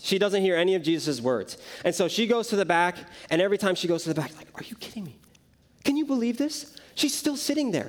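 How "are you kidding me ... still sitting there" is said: fed-up, frustrated, pitched-up exasperated muttering. Retelling how Martha grumbled in the back: imitating frustrated Martha. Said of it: "And she's just frustrated".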